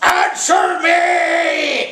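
shrill monster roar with "me" stretched out. A narrator reads the monster's line, roaring monster. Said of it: "roared the monster".

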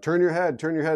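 put-on, mild half-yell. Retelling an instructor's commands during figure eights: imitating someone yelling. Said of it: "he's yelling at me".

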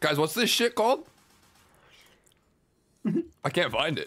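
speaking with mouth full of food. Speaker asking the others what something is called, talking with mouth full. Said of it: "Why'd you say it like that, bro?".

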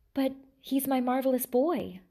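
stammered, stammering. A narrator reading the king's reply to his new wife, stammering. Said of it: "stammered the king".

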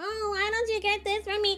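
snobbish, condescending, high, whiny tone. Mocking how Monica communicates, imitating Monica's complaining tone. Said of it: "it's always in this complaining tone".

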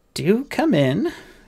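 hesitant, uncertain, very high voice. A tall woman opens a door to a waiting man, uncertain. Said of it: "said a tall woman uncertainly".

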